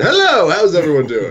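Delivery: animated, high, swooping, bouncy cartoon character voice. Greeting everyone on camera, doing a Simpsons impression. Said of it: "I just also wanted to just do a Simpsons impression".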